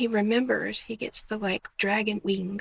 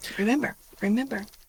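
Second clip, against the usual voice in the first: ordinary delivery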